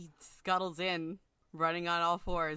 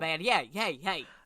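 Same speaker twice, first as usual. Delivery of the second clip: New York character voice; 5 dB louder than usual. Speaker voicing their character, in a New York accent.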